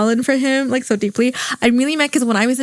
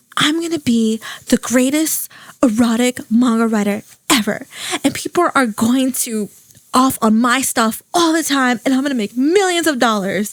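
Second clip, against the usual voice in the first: ordinary talk, nothing marked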